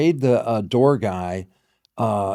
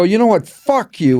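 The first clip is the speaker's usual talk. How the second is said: put-on fed-up, angry outburst, pitched up; 9 semitones higher, 7 dB louder than usual. Retelling hanging up on callers, retelling an angry outburst. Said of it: "I was so pissed".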